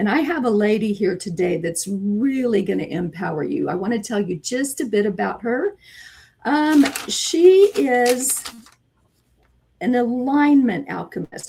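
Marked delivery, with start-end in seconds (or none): 7.1-11.5 drawn out word by word, very slow and deliberate. Podcast host introducing her guest's title, saying it real slow. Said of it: "I have to say that real slow".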